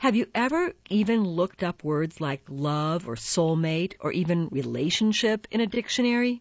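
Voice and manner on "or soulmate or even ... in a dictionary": plain reading voice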